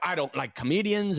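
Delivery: put-on Irish accent. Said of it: "Irish accent".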